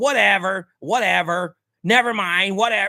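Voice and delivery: mock dismissive, rude, drawn-out, attitude-heavy. Retelling what a rider said on the phone: imitating a passenger acting rude. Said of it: "acting shitty and shit".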